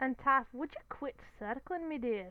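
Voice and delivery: put-on broad Scottish accent, laid on thick. Voicing a pumpkin-headed man asking taff to quit circling: thick scottish accent. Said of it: "in his thick Scottish accent".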